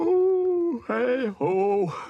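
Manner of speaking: mid-yawn. A character made invisible by a spell, which makes him sleepy, yawning. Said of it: "There, I'm yawning again".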